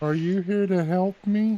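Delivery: put-on tiny childlike voice, pitched way up, very high. During a roleplaying scene, a child character speaks up: small childlike voice. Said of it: "small childlike voice".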